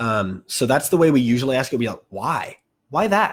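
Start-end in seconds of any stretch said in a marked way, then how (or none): 2.1-3.1 heavy stress on why, higher pitch. Giving an example of question intonation, stressing the word why. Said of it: "the word why as a question word gets a lot of tone".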